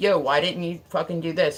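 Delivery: ordinary talk, nothing marked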